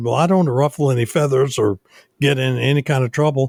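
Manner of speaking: ordinary talk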